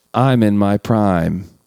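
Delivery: imitated film-line rhythm. Taking a turn in a movie-quote guessing game, using the quote's cadence. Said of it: "I'll do the cadence first".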